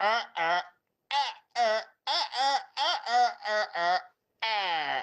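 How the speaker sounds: very slow, halting stammer, stuck on uhs. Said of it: "he sounds like the bloody old A O L, um, dial-up internet".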